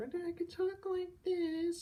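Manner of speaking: very high pitch. Contrasting with a normally deep voice, speaker shows a higher-pitched voice. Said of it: "it's a totally different kind of pitch... that's a higher pitch compared to... how I normally talk".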